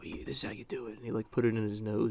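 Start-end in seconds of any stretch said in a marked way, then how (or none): 0.0-1.0 soft, hushed whisper under the breath. Retelling what a guy said while showing how to sniff a Sharpie, retelling a whisper. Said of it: "he's just like whispering".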